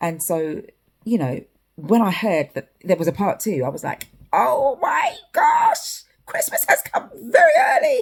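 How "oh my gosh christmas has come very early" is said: silly put-on voice, very high, swooping and excited. Recalling hearing of a part two, the speaker quotes their own reaction in a put-on voice. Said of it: "Sorry about that voice".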